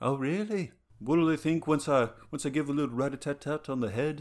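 jokey put-on Liverpool accent, played for laughs. Playing a Beatle in a comedy bit, Liverpudlian accent. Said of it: "Just so I can do my Liverpudlian accent".

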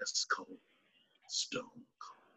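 low, unhurried, breathy near-whisper murmur. Describing how a character talked in interviews, imitating a low, slow voice. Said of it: "talking in a low, slow voice".

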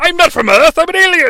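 high, loud yelling in a bad put-on English accent. Speaker voicing John Lithgow as the villain: shitty John Lithgow impression. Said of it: "It's a really shitty John Lithgow".

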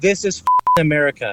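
ordinary talk, nothing marked

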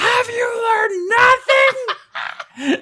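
shrill, booming, very high, slow, drawn-out shriek. Telling a story about Alex calling across a theater, retelling Alex's scream. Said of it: "she screams across the theater".

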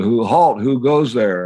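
yelled like a sentry. Coming back at midnight, a friend challenges the group; retelling a yell. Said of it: "Mike Hagan yelled".

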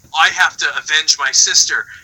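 ordinary delivery

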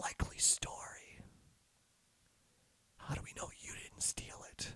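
raspy, barely audible whispered voice. Game narrator voices a serious elf speaking from the doorway, raspy whispery voice. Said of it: "a raspy whispery voice".

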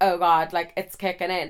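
normal talking voice

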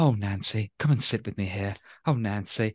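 put-on talking down as if to a small child. Complaining about how a character treats women: imitating Frasier talking to a child. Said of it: "he talks them like children".

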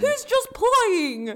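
weird, very high and loud voice. Recapping a scene where Marissa speaks up to an angry man, in her weird prank voice. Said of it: "she has her prank, weird voice".

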